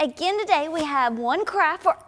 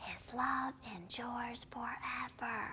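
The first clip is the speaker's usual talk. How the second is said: soft, slow whisper. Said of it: "let's whisper".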